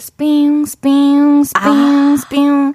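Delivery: very slow, loud, drawn-out cicada-like "spiung" sound. Performing a requested sound for the other speaker: cicada sound imitation. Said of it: "매미 소리".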